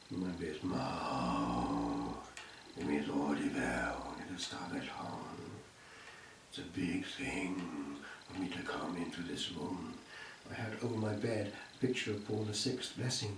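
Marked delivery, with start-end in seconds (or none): 0.1-9.9 grave, very slow, very low and soft, hushed. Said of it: "said very slowly and solemnly".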